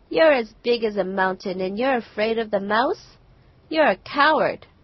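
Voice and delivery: loud, taunting, laughing, scornful mockery. Narrator reads the fox's taunt to the lion, laughing mockingly. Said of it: "The fox laughed mockingly to the lion and said".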